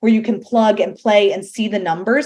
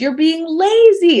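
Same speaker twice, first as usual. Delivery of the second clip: high, raised, scolding shout; 8 semitones higher, 4 dB louder than usual. Quoting an author's advice about funding a venture: retelling a yell. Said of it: "I didn't mean to yell at you".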